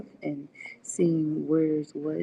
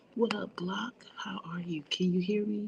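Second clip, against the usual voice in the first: quiet whispered voice; 3 semitones higher, 5 dB quieter than usual. Speaking from the library to a caller, checking they can hear: whispering. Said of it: "I have to whisper while in the library".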